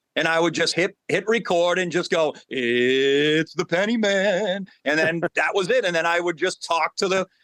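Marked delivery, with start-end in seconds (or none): 2.5-4.7 very slow, creepy, drawn-out voice. Recalling how he introduced his videos, a speaker uses a creepy voice. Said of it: "with this creepy voice".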